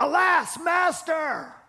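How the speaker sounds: high cry of anguish. Quoting a young man's cry to his master, acting out an anguished cry. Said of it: "you can hear the anguish".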